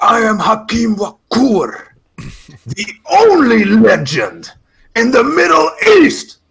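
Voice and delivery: mock loud, high, swooping, booming, drawn-out shout. Retelling how a wrestler stood up from his chair: imitating a shout. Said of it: "shouted to, like, twenty, thirty people".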